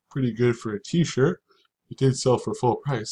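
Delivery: tired, yawning while talking. Speaker reviewing items sold, yawning while talking. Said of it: "I'm yawning again".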